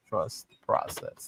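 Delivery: hushed, breathy, whispered put-on voice. Reading a listener's message aloud, the speaker says it in a Leo voice. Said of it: "She said in my Leo voice".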